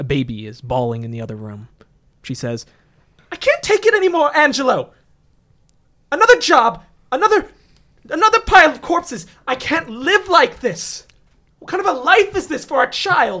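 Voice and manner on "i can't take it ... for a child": very high, shrill, angry, furious yelling. Narrator voices the player character's wife at the table, yelling. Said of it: "She's yelling at you".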